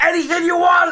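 put-on furious shouting. Acting out Uncle Rage, an aggressive relation, offering birthday presents: Uncle Rage furious shout. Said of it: "Uncle Rage would go".

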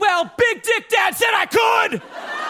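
put-on high, screaming, shouted teenager whine.

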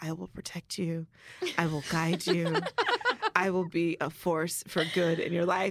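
hoarse theatrical whisper. Retelling how a man whispered in a woman's ear, imitating a raspy whisper. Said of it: "he was like whispering in her ear".

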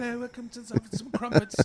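high mock posh British accent. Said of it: "talking like this".

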